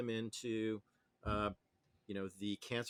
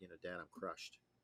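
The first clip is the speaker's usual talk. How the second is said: put-on deadpan delivery, much quieter; 4 semitones lower, 9 dB quieter than usual. Quoting your son's reply to what you told him: imitating a deadpan delivery. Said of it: "in his deadpan way".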